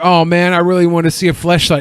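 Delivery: ordinary delivery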